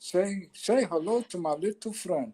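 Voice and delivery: very slow delivery, every single word drawn out. Quoting a gangster movie line: Scarface quote voice.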